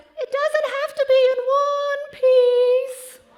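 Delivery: eerie, shrill falsetto, very high and loud. Retelling what a huge man said from deep in a crawl space, in the creepiest falsetto. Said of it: "in the creepiest falsetto I have ever heard".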